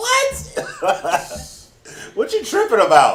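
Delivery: very high-pitched voice, pushed way up. Acting out a hypothetical reaction to someone, in a high-pitched voice. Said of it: "hit him with the high pitched voice".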